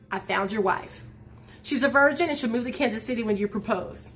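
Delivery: ordinary delivery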